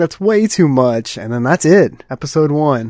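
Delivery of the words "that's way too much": weepy, tearful, sobbing crying voice. Retelling an anime ending, imitating a character crying. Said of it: "and she's crying".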